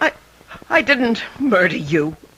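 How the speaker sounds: tremulous, trembling, quavering voice. Denying a murder to a caller on the phone: trembling voice. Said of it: "The tremor in that golden voice".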